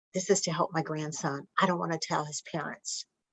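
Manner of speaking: very hushed, confiding whisper. Retelling what a woman told a bank teller: imitating someone whispering. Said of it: "she whispers to the teller".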